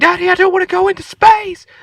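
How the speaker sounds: mock very high, shrill, rushed, terrified child's scream. Retelling a ride where the daughter panicked: imitating a screaming child. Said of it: "screaming like she was about to die".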